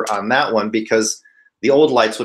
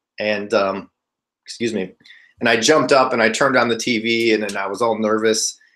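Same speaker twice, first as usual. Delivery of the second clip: usual speaking voice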